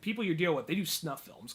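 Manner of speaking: ordinary talk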